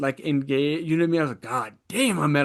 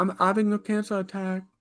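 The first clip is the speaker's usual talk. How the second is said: bad, put-on, pitched-up British accent; 5 semitones higher than usual. Quoting a kid from a show, imitating a British accent. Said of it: "I can't do British".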